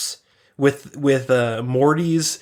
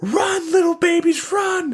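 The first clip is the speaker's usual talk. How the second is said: play-acted very high horrified scream. Recapping a cartoon scene, quoting a character's cry to the babies, mock-horrified scream. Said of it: "you can just hear like the genuine horror in his voice".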